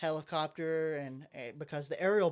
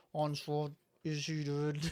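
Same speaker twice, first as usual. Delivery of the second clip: robotic voice. Retelling a comic scene to another speaker: Soundwave impression. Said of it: "great S-, Soundwave impression".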